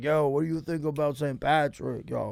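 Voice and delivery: soft, put-on Italian guy accent. Speaker mimics an Irish guy who talks like an Italian guy, imitating an Italian guy's accent. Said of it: "That's how he talks, like an Italian guy".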